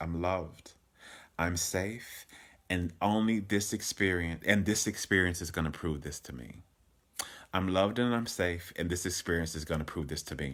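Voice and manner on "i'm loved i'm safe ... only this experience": plain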